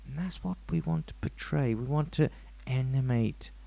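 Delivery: low, soft psychiatrist voice. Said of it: "What is that voice?".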